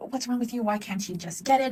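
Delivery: pissed-off berating voice. Speaker describes getting frustrated with a kid struggling with math homework: mock pissed-off scolding. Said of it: "you have a pissed off tone".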